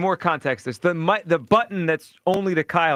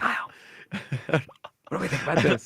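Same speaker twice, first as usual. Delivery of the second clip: mock whisper, much quieter and lower; 2 semitones lower, 6 dB quieter than usual. A host recalls a co-host asking a question with the mics off: imitating a whisper. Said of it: "you don't have to whisper".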